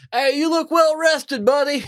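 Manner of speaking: friendly shout, pitched very high. Calling up to the quartermaster in character: yelling up to someone. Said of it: "I wanna yell up".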